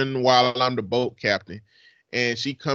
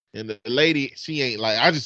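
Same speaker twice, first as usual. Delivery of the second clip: normal talking voice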